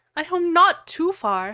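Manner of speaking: high, furious, jealous, angry shouting yell. Reading a fan story aloud, a character answers: angry shout. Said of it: "I shouted angrily".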